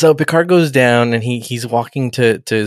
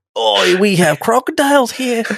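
voice pushed way up high; 11 semitones higher than usual. Retelling a scene where the nephew greets Picard: Steve Irwin voice. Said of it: "He sounds like, uh, Steve Irwin for some reason".

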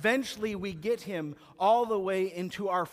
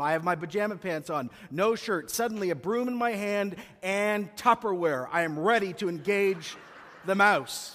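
ordinary talk, nothing marked

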